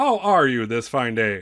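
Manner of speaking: put-on loud elderly man voice. Voicing an old robed man who approaches a player: voicing an old man. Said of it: "he's like".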